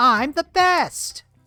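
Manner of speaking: very high, loud, squealed cartoon voice. Recalling what Toad sounds like in Mario sixty-four: Toad voice. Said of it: "We all know what Toad sounds like".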